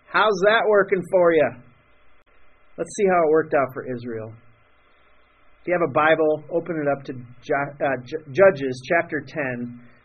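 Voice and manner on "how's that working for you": put-on big, broad, laid-on-thick Texas accent. Quoting a TV figure's famous saying: Dr. Phil big Texas accent. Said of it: "in his big Texas accent".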